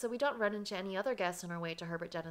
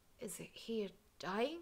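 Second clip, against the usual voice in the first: soft, startled whisper; 6 dB quieter than usual. A narrator, shocked at a man's condition, whispers to a companion. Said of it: "I can't help but whisper to Emile".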